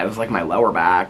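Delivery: normal talking voice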